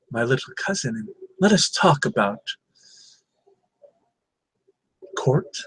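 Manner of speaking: low, hushed whisper, kept down. A woman draws the listener aside to talk, whispering low. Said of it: "and she whispers low".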